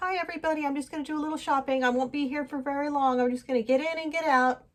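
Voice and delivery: high-pitched, courteous, polite tone. Retelling a shoplifter greeting the store staff: imitating a polite greeting. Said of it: "he was real polite".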